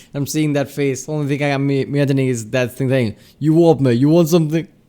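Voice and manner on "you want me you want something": put-on British-accented voice. Imagining the wombat from the video talking: British accent. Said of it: "in British accent".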